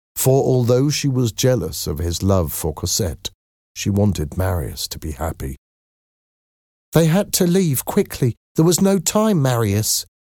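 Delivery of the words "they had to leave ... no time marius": very high, soothing, comforting voice. A woman speaking to a desperate man, comforting. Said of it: "trying to comfort him".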